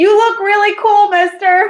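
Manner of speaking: very high, loud, carrying shout. Playing a boy calling up to a giant walrus: shouting up to someone. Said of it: "kinda shouts up".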